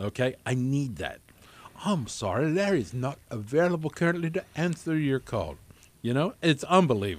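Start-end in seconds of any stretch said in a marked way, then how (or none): 1.8-5.5 put-on polished, proper British voicemail-lady accent. Retelling a friend's voicemail greeting: imitating a proper British female voice. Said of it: "a very proper sounding female British person".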